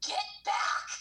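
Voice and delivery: demonic, devil-like screamed delivery. Retelling yelling at a man who knocked on the window: retelling a scream like Satan. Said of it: "screamed at him like Satan".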